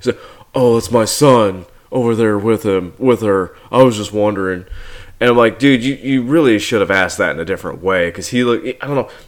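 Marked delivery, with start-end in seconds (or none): 0.5-4.7 tired, weary, leering, horny, suggestive delivery. Retelling a film character asking about her daughter: imitating a tired, horny delivery. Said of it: "the way his delivery is like he's tired and horny".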